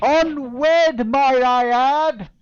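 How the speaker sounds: very high, very loud, shrill projecting voice. A game narrator voices a woman dropping a hint to the captain; very loud. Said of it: "So she says very loudly".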